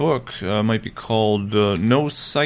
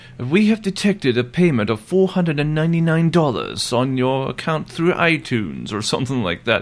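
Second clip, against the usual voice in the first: put-on British accent, pleasant woman's voice, pitched higher; 3 semitones higher than usual. Speaker imitates a supposed PayPal scam call; nice British lady's voice. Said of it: "Using a nice British lady's voice".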